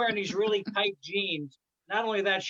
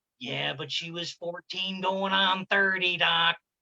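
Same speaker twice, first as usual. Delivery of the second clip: put-on movie star drawl. Retelling a movie scene, doing Jack Nicholson answering a therapist. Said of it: "And Jack Nicholson went".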